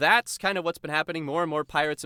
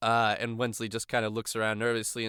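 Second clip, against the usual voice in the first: ordinary talk, nothing marked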